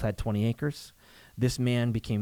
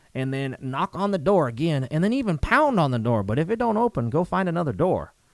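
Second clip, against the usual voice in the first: put-on Southern accent, pitched higher and louder than normal; 5 semitones higher, 5 dB louder than usual. Retelling what an old farmer said: imitating a farmer's Southern accent. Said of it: "I'm probably gonna use an accent".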